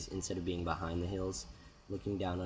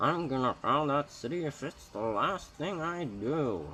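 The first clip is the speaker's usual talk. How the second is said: put-on loud, high, grumpy, cranky old man voice; 8 semitones higher, 6 dB louder than usual. Remarking on his own stubbornness, then speaking in a grumpy old man voice. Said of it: "it's a grumpy old man voice right there".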